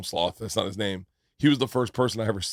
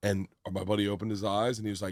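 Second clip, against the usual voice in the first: ordinary talk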